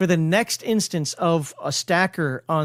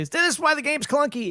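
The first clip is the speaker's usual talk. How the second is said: high-pitched, mock complaining, grumbling voice. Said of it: "have people say".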